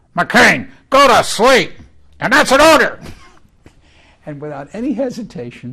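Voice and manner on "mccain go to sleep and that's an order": put-on disgruntled displeasure, much louder, higher. Retelling a voice nearby ordering someone to go to sleep, retelling a disgruntled order. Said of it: "in a very disgruntled and displeased voice".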